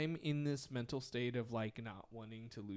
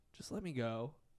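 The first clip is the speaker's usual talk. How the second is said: normal talking voice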